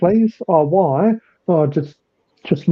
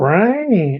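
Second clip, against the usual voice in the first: ranch said punchy, with a strong American accent; 3 semitones higher than usual. Imitating americans pronouncing ranch: mock american accent. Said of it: "Americans always like to start off strong and end strong?".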